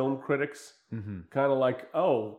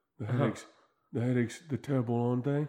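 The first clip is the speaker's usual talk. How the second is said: put-on English actor voice; 4 dB quieter than usual. Quoting a movie scene where a character gets shot: Clive Owen impression. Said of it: "That's my Clive Owen impression".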